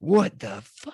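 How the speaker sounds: put-on furious outburst, high-pitched. Retelling how the Uber driver reacted when a car pulled out, imitating a furious outburst. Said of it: "he loses his mind".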